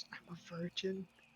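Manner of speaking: barely audible, very quiet half-whisper. In a tabletop role-play, a player voices a character, half-whispering. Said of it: "he whispers".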